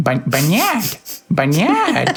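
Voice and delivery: cutesy, sing-song little kitty voice. Player showing how a name would sound said in a cute cat voice. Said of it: "with a sort of um, cute, you know, cat cat voice".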